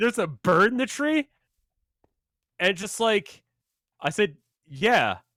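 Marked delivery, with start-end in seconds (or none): 0.0-1.3 high, utterly incredulous disbelief. Retelling how a man questioned them, in a mock-incredulous tone. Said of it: "In the most incredulous tone".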